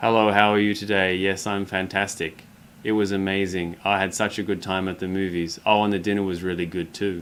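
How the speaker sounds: flat monotone, unchanging pitch and pace. Demonstrating how some people talk with no variation, flat monotone. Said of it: "monotony, where their tone level in their voice or their speed doesn't actually change".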